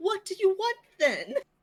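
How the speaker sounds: very high, polite, courteous shout. Retelling a moment when everyone was screaming, imitating Mira's polite yell. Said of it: "In her polite but still yelling".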